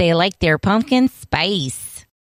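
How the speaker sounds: put-on Nebraska accent. Trying the accent again after losing it: Nebraska accent. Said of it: "That was good".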